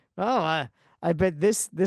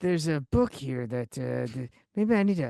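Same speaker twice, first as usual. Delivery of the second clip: mumbled character voice, much lower; 3 semitones lower than usual. Discussing a voice actor's game performance, imitating Indiana Jones mumbling. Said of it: "his main method of becoming Indiana Jones is mumbling".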